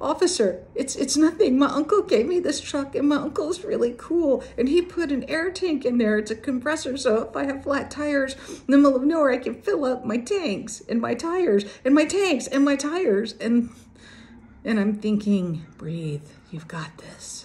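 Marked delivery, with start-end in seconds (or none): 0.0-13.3 put-on high, frightened child's voice. Speaker retells her kid answering an officer, in his scaredest voice. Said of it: "in this like scaredest voice".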